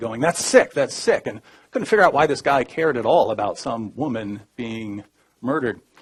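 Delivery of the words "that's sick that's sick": pitched-up yell. Retelling how a guard yelled at the speaker after a remark: imitating a guard yelling. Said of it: "he starts yelling at me".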